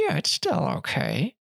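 words forced through clenched teeth. Imagining another speaker rewatching a bad film: mock gritted-teeth voice. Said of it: "just gritted teeth say".

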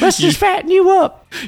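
put-on high grandma voice. Imitating the other speaker's grandmother feeding someone: grandma voice. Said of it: "That's how she talked".

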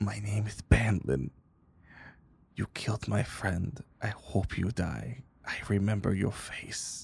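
menacing whisper. Narrating a scene in second person, a character speaks to you: Bandlin whispering. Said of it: "he whispers to you".

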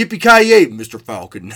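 very deep, bass dubbed-movie voice. Mimicking the TV redub of a film line: imitating the TV dub's much deeper voice. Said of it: "Has a much deeper voice".

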